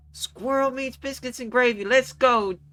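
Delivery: angry shouting. Playing diner staff calling back a customer's order, angry shouting. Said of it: "shouts back in like an angry voice".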